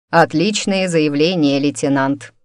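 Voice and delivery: ordinary delivery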